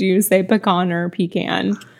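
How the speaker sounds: usual speaking voice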